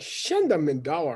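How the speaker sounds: affronted, put-out, indignant offended tone. Explaining the tone a phrase must be said in: offended Shenda Mandawar. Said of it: "like a offended s- sound of voice".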